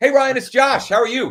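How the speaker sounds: play-acted, very high, loud, bubbly, upbeat excitement. Replaying own past greeting to ryan: acting out own excited greeting. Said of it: "part of it was my tone. I was excited".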